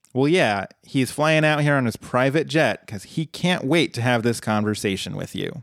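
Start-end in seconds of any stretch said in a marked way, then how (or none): none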